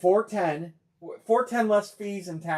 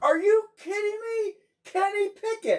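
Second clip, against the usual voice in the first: very high, screaming, top-of-the-lungs excited hype yell. Speaker impersonates people breaking a Kenny Pickett Steelers helmet card. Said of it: "I could do impersonation".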